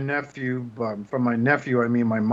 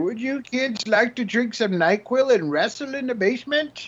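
put-on very high, creepy, wrinkly little old lady voice; 10 semitones higher than usual. Reviewing a figure, voicing the old lady its face resembles: wrinkly old lady voice. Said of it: "wrinkly old lady that's sitting there just like".

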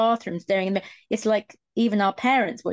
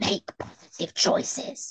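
breathy, whispered hiss; 4 dB quieter than usual. Retelling a teacher who came up behind him and leaned into his ear: retelling a hiss. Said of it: "she hissed".

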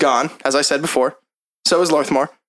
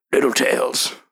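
whispered mutter, lower; 4 semitones lower than usual. Playing a fisherman talking about the fish he catches, muttered under his breath. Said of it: "He just says under his breath".

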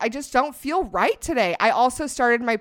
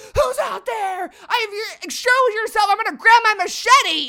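acted, frantic, panicked shout, very high-pitched; 11 semitones higher, 4 dB louder than usual. Retelling how mom heard noises at night: imitating mom freaking out. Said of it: "freak out".

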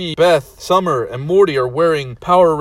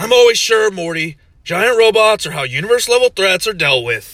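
boastful, cocksure, bragging delivery; 5 semitones higher than usual. Narrator voicing Rick answering Morty as the mech blasts off: Rick voice. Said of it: "Shut up, [name]. I don't need your affirmations. I know how impressive I am".

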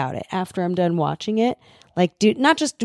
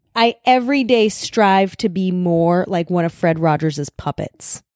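usual speaking voice

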